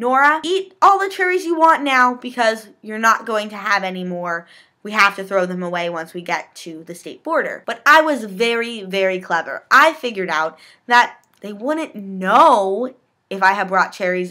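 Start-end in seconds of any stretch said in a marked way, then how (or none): none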